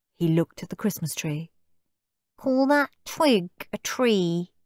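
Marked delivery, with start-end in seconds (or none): 2.4-4.5 high, scornful, boastful sneering taunt. Narrator reads Steve looking at the Christmas tree, sneering. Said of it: "sneered Steve".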